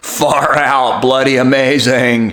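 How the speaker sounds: loud stoner surfer dude voice. Speaker runs through his accent impressions, doing his Spicoli voice. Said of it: "That's my Spicoli".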